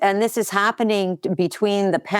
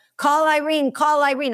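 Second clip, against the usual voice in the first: urgent, strained, pitched-up yell; 7 semitones higher than usual. Acting out a man with strained vocal cords, imitating his yell. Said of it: "So he's yelling".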